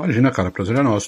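speaking with mouth full, chewing. Replying to a guest's greeting while eating, talking with mouth full. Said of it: "Tô de boca cheia aqui, tô comendo".

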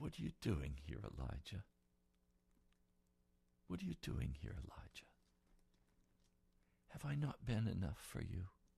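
soft, tender, low, hushed half-whisper. Retelling God's words to Elijah at the door, in a gentle half-whisper. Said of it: "in a gentle whisper".

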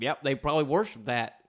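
loud, terrible fake Southern accent. Voicing imagined aliens, in a terrible Southern accent. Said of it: "that was a terrible accent".

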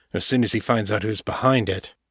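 ordinary delivery

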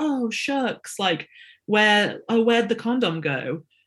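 put-on disingenuous playing-dumb tone, swooping. Retelling his reply when she asked what happened: imitating a disingenuous tone. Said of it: "in this really, like, disingenuous way".

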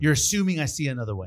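normal talking voice

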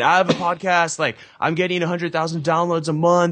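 mock high, eager yelling. Retelling pushing through a crowd to pitch a keynote speaker: retelling own yelling. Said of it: "And I just started yelling".

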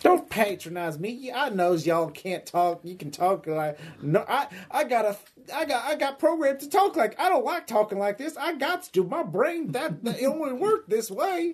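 put-on hillbilly voice, very high-pitched. Voicing a guard programmed to act like a hillbilly: hillbilly voice. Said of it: "programmed to act like a, uh, hillbilly from popular media".

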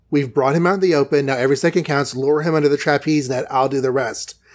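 normal talking voice

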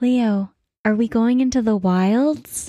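hushed whisper. In a game, tapping a companion on the shoulder with a vine: whispering. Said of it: "they are going to whisper".

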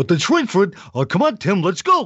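high cartoon voice, pitch swooping up and down. Recalling voicing call-outs with kids' names for Cartoon Network, Barney Rubble voice. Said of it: "I did the voice of Barney Rubble".

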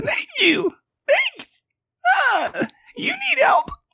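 very high, swooping, really irritating mantis bug voice. Voicing a mantis thanking the party for saving its village: really annoying mantis voice. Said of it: "I'm glad I get to do it again".

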